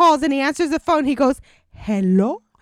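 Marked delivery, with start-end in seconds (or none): 1.7-2.4 put-on, fake Spanish accent. Retelling how he answers the phone, imitating a put-on Spanish accent. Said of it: "that doesn't make it a Spanish word".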